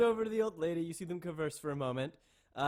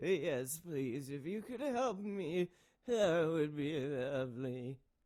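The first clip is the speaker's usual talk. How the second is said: put-on frail old woman voice, quieter; 4 dB quieter than usual. In a role-play, a frail old woman accepts a player's offer to lead her: frail old woman voice. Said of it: "I tower over this frail old woman".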